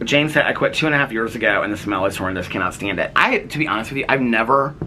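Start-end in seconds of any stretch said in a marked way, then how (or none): none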